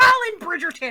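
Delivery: very loud, shrill, stern scolding voice. Recounting a bridgerton scene, speaker imitates her suddenly switching into a mom voice. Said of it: "she becomes mom real fast".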